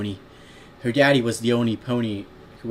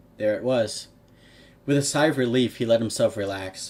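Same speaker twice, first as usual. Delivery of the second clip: ordinary delivery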